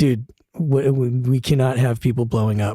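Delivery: ordinary talk, nothing marked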